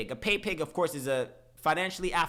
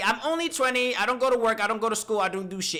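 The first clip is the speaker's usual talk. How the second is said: mock proud, confident tone, higher and louder; 6 semitones higher, 5 dB louder than usual. Reacting to a video, repeating the girl's words: imitating someone saying it confidently. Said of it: "And she says it so confidently".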